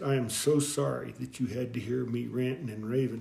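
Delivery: mock-earnest, sincere tone. Retelling what a man on the church steps told him: retelling an earnest apology. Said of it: "he tells me real earnestly".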